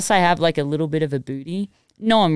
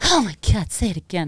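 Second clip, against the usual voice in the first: mock swooning, like adoring fans. Retelling how people react to the accent: imitating fans swooning. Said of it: "people are like".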